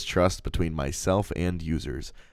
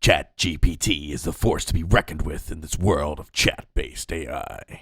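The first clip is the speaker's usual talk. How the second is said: movie trailer announcer voice, slower. Speaker redoing a ChatGPT promo line, movie trailer announcer voice. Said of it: "in the style of a movie trailer announcer's voice".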